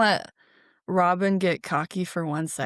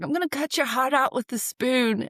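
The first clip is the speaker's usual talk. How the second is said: put-on angry shout, loud and forceful; 6 semitones higher than usual. Quoting a favorite movie line yelled at Robin, retelling Sheriff of Nottingham yelling. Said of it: "He yells at him".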